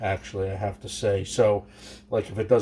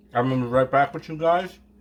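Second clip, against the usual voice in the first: mouth full, chewing, higher pitch; 5 semitones higher, 4 dB louder than usual. Making a dish, the speaker addresses viewers while talking with a mouthful of carrot. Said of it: "Got a mouthful of carrot".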